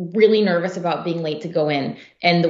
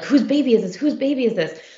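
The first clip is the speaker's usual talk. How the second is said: mock high, raised shout, as across a crowd; 6 semitones higher than usual. Recounting the crowd running toward her son at school, imitating people shouting. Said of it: "everyone shouting like".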